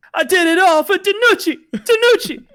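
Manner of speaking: very high, loud, squeaky put-on voice.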